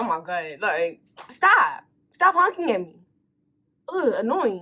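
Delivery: mock annoyed, fed-up, exasperated outburst. Retelling being honked at while stopped at a red light: retelling own irritated outburst. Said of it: "now I'm irritated".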